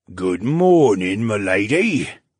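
very slow, deep, throaty creaking croak. An older coachman greets the lady from his carriage: deep throaty croak. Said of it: "croaked in a deep, throaty voice".

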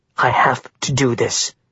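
plain

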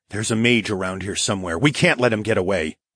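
ordinary delivery

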